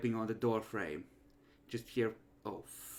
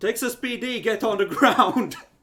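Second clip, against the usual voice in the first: very high, very loud, shrill yell; 12 semitones higher, 13 dB louder than usual. Voicing a character bursting through a door, yelling. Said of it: "she just yells out".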